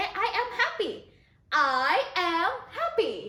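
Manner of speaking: put-on cheerful tone. Teacher showing a student how to say the practice phrase, acting happy. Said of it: "you have to act like this when you say".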